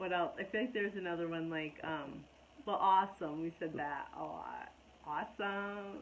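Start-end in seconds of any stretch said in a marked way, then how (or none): 5.1-6.0 put-on middle-schooler tone, quieter. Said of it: "I don't know if we said it like that".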